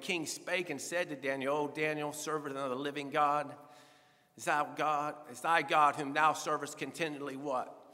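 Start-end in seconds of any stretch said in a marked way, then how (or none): none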